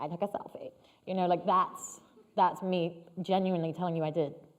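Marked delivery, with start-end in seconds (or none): 0.0-0.7 squeaky, high, breathy, half-whispered joking put-on voice. Showing how a joke gets made about oneself: high-pitched joking voice. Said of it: "a high-pitched voice and be like".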